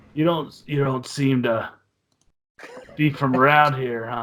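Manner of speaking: rough, gravel-throated rasping character voice. Game master voicing a female Durgar eyeing the players up and down, gravelly voice. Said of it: "says in a gravelly voice".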